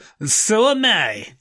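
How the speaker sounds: high, slow Russian accent.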